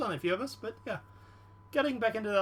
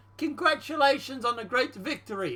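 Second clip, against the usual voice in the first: put-on Russian accent. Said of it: "My wrong accent".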